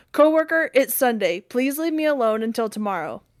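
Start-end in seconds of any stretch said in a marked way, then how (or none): none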